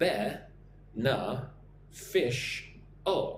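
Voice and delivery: beneficial said slowly, syllables separated. Teaching a word, asking listeners to say it along: nice and slow. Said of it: "Nice and slow".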